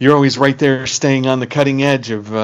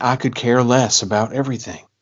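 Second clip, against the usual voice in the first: heavy Southern drawl, laid on thick; 5 dB quieter than usual. Quoting what the grandmother constantly said, imitating a thick southern drawl. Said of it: "thick Southern drawl".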